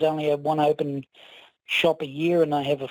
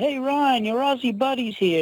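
put-on high, loud, called-out holler; 9 semitones higher than usual. Retelling a counter worker calling out to a colleague: imitating someone yelling out. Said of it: "he yells out".

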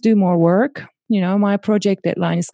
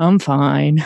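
mock dismissive tone, lower; 6 semitones lower than usual. Showing how people answer when asked how they are: imitating a brushed-off "i'm fine". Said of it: "and in this tone".

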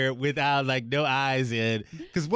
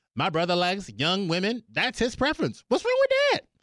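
high, matter-of-fact mock voice. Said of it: "he is speaking matter-of-factly".

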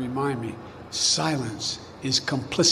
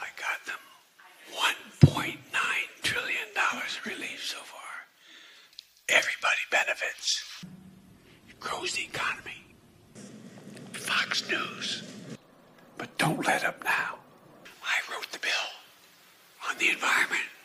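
soft, breathy whisper close to the mic; 6 dB quieter than usual. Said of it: "why is he whispering so much?".

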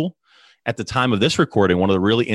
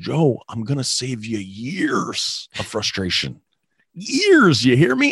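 slow, swooping, put-on Canadian accent; 4 semitones higher than usual. Quoting a mentor who is helping him: imitating a mentor's Canadian accent. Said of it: "a mentor with a great Canadian accent".

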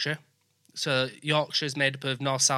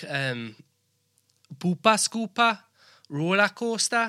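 put-on Geordie accent, drawn out, pitched up; 6 semitones higher than usual. Demonstrating words that make you sound Geordie, in a Geordie accent. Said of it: "They speak like these".

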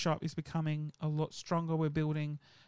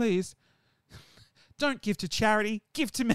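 fake, loud, high-pitched desperate begging; 5 semitones higher, 6 dB louder than usual. Joking to viewers about Patreon support: mock desperate pleading. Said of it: "how desperate do I sound now?".

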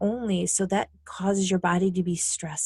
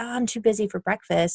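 ordinary talk, nothing marked

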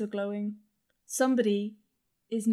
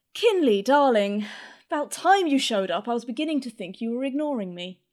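loud, ringing voice; 2 semitones higher, 7 dB louder than usual. Voicing an unseen speaker who greets someone in the dark: voice ringing out. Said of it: "a voice rings out and goes".

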